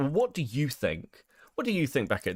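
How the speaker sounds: pushy, demanding, aggressive, pressing tone. Retelling an interview question from the interviewer: aggressive imitation of Connor. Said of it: "that sounded very aggressive".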